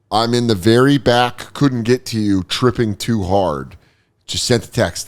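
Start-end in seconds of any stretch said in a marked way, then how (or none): none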